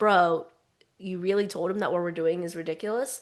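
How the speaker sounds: serious, irritated, earnest, not playful. Retelling the character's line again: imitating a pissed-off, unplayful tone. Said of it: "It's that same tone".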